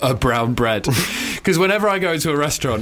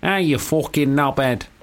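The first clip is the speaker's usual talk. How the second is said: put-on, nasal Manchester accent; 2 semitones higher than usual. Showing the equivalent phrase for manchester, in a manchester accent. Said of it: "For Manchester, I would have to go".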